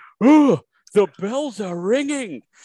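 huge, very high booming commentator roar. Quoting a commentator's call of a big hit: imitating Rabs' huge voice. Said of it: "a huge voice that I can't possibly imitate".

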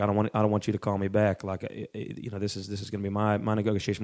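put-on Southern US accent, halting, with repeats. Imitating a man heard on hostage negotiation tapes: Southern accent. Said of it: "it was a Southerner, so he'd be like".

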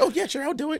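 very high, loud, eager lady voice.

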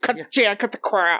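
voice like a possessed demon. Retelling a movie cameo scene, imitating Florence Henderson's demonic voice. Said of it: "she has this demonic voice that's like".

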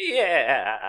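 "yeah" high-pitched and drawn out, cartoon-style. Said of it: "Tom Kenny's rat is like".

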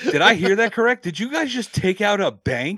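mock disbelief, high and loud.

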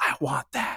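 soft, breathy whispered aside. Imitating a lady from Napoleon Dynamite whispering to her husband: whispering like the Napoleon Dynamite lady. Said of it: "that lady whispers to her husband".

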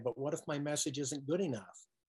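ordinary delivery

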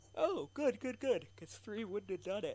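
high voice, words pushed through a yawn. Reacting to a roll of four successes, the speaker talks while yawning. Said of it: "sorry, I'm yawning".

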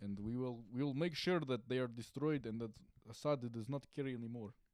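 put-on Russian-accented voice. Trying again after going too high pitched the first time, do a Putin impression. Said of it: "Was that better?".

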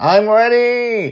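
exasperated near-shout, very loud and very high. Reading a story aloud, a girl tired of waiting: almost shouting. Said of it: "she almost shouts".

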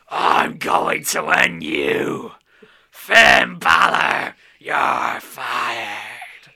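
deep, rough, slow bellowing. Recapping a wrestling match, quoting a wrestler's threat: Vince McMahon voice. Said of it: "That's my Vince voice".

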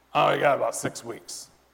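put-on, gravelly man's voice. Retelling what Greg told him, the speaker quotes him, imitating Greg's gravelly voice. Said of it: "he has this real, real gravelly voice".

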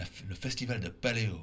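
bad put-on French accent. Saying the festival's name, trying to speak French with a terrible accent. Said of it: "trying to speak French with a terrible accent".

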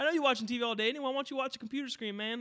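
slangy spokesman spiel. Imitating the spokesman from an MTV education ad: imitating the MTV ad spokesman. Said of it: "he talks like that".

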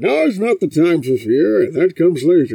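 loud, booming villain voice with a filtered sound.

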